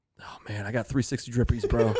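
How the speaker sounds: dead serious, plain, level deadpan. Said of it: "Dead serious".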